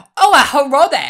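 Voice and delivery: shrill, very loud, very high squeal in exaggerated accent. Describing a cartoon janitor's speech: imitating Dang's accent.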